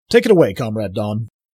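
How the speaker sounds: ordinary talk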